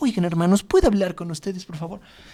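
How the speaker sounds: feeble, meek voice with no force or authority. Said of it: "como el clásico cristiano débil".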